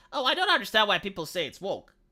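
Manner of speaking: ordinary talk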